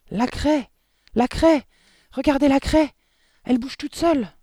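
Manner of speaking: halting, shrill, very high, very loud hysterical shriek. In a classroom, someone calls everyone's attention, hysterical and very high-voiced. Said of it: "Sa voix suraiguë avait pris un tel accent d'hystérie".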